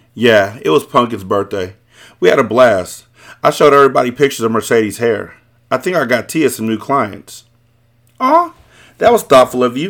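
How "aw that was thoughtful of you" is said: playful, high, sing-song teasing. Replying to someone telling about a birthday party, teasing. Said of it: "I teased".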